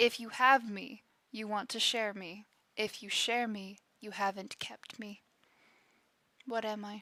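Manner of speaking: deep, soft, looming, mysterious-sounding voice. Reading out a riddle that a deep voice says to the player, deep voice. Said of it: "deep voice says this to you".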